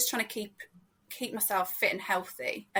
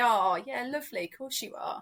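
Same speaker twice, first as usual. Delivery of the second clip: mock patronising tone of voice; 2 semitones higher than usual. Showing how someone sounds patting you on the head: imitating a patronising tone. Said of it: "This really patronising tone".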